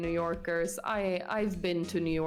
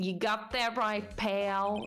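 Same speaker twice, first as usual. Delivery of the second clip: put-on New York gangster voice, higher pitch; 3 semitones higher than usual. Voicing a detective questioned by a lawyer: New York gangster accent. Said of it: "my impression of, like, New York gangster".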